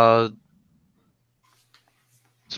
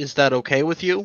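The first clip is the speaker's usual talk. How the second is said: ordinary talk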